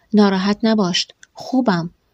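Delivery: ordinary delivery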